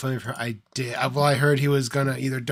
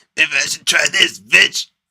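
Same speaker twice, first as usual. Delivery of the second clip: very loud, shouted yell; 3 semitones higher, 8 dB louder than usual. Imitating someone who is told the answer: shitty impression of him. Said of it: "That was a shitty impression".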